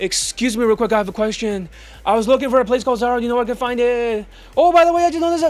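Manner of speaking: rapid-fire, high-pitched, nonstop babble. Mocking students from Europe asking for directions, imitating fast-talking European students. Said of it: "They talk so fast".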